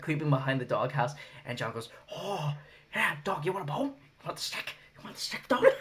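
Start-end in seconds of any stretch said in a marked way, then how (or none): 2.1-5.6 high, creepy, unhinged, taunting demented villain voice. Retelling how John talked to a bloodied man in a dog costume, imitating Crazy John. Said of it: "your voice for Crazy John's like everyone's Joker impression".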